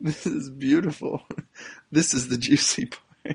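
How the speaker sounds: speaking through laughter. Reading a news article aloud, laughing while talking. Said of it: "I'm sorry I'm laughing".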